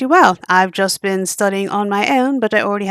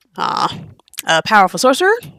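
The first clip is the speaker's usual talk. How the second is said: normal talking voice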